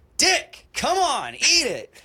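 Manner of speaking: very high, swooping, drawn-out hollering. Retelling being pushed to eat while drunk: imitating someone yelling. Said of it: "Fucking Ray kept yelling at me".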